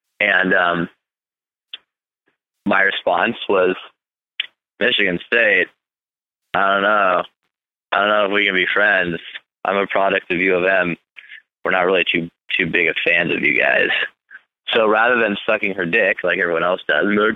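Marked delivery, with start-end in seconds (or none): none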